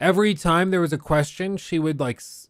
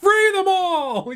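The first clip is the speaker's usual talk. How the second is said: put-on screaming, higher and louder; 4 dB louder than usual. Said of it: "starts casually, like, screaming at dinner".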